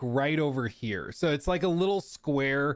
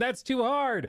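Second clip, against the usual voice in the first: mock very high, shrill shrieking; 9 semitones higher than usual. Retelling what a lady in the crowd shouted: imitating a screaming lady. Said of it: "There's some lady screaming".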